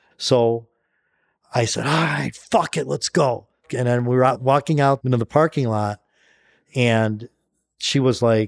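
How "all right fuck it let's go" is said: put-on, furious, rough, fed-up berserk outburst. Retelling the moment she couldn't get into the gym: acting out going berserk. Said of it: "And I went fucking berserk".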